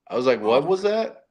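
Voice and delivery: plain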